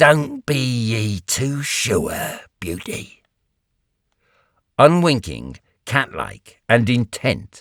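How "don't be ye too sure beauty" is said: quiet croak, under the breath. Reading a story aloud, the woman speaks to a man lying still: croaking under her breath. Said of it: "she croaks under her breath".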